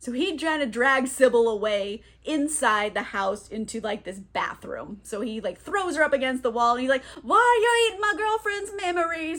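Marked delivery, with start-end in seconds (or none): 7.2-9.4 put-on high, drunken, belligerent voice. Recapping a scene, the speaker acts out Teddy: imitating drunk, belligerent Teddy. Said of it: "Like he's drunk and belligerent".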